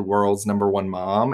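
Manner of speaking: ordinary talk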